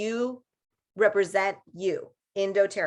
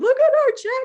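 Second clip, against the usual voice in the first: put-on tearful voice, higher and louder; 6 dB louder than usual. Retelling complaining to her husband about a small check: retelling own past crying. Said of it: "me just crying".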